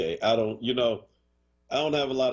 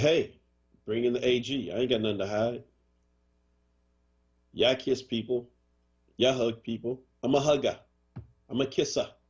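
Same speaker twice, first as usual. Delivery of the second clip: laid-on, put-on New York accent. Imitating a governor answering allegations, New York accent impression of Cuomo. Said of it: "How's that New York accent".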